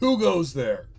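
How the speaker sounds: goblin voice, calling out loudly. Voicing someone in the darkness challenging the approaching party, shouting.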